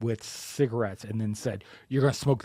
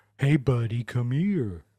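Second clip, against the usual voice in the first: put-on coaxing clown voice. Asked about their normal voice, imitating the clown coaxing the kid into the gutter. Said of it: "the clown like was trying to coax the kid".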